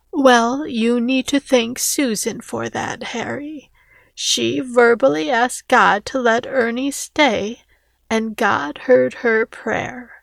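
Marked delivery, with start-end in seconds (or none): none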